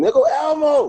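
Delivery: put-on very high screaming little child voice. Retelling how a five-year-old daughter spotted elmo: imitating a child screaming. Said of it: "she started screaming".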